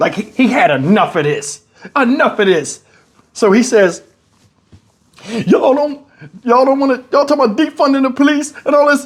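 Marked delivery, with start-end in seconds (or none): 5.5-9.1 put-on tearful voice cracking like crying, higher. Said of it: "His voice cracked like he was crying".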